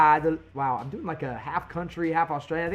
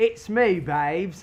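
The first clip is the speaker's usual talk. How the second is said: put-on, attempted Australian accent; 2 semitones higher than usual. Answering a request to try an accent, put-on australian accent. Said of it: "Is that how you say it down in Australia?".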